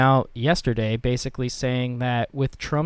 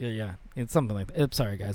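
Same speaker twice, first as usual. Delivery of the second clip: usual speaking voice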